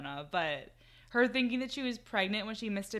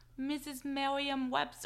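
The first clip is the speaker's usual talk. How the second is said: bad, higher-pitched put-on speech impediment; 6 semitones higher, 3 dB quieter than usual. Retelling what Jackie said, with a bad Jackie impersonation. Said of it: "I can't do a Jackie impersonation".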